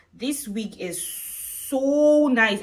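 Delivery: stretched emphasis on so.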